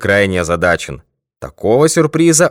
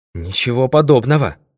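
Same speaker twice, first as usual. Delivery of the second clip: plain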